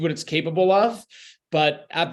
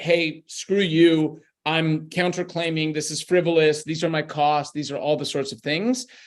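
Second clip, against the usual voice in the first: usual speaking voice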